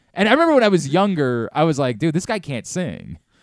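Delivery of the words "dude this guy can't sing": ordinary delivery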